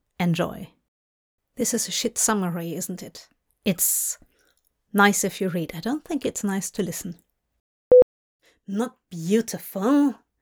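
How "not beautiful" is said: grumpy muttering, grumbling. Reading a story aloud, a character complains about something: grumbling. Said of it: "he grumbled".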